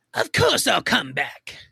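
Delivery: high, rough, gritty comic-book villain voice. Answering what Mark said when asked back: Mark Hamill Joker voice.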